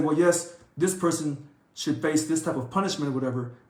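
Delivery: ordinary delivery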